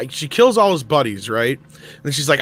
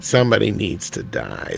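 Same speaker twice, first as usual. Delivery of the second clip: creepy, rough, creaky rasping voice; 5 semitones lower than usual. Retelling how Kasdan wanted to kill off a character, speak in a creepy Kasdan voice. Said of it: "That creepy voice".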